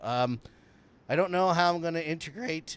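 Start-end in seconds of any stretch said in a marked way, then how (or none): 1.1-2.8 voice cracking and breaking while talking. Explaining a live feed problem while laughing: voice cracking. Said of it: "my voice is cracking".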